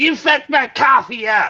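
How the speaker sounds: high-pitched, entitled, complaining tone. Acting out a customer complaining about coffee: imitating a Karen customer. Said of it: "a Karen walks in and goes".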